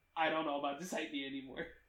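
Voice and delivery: ordinary talk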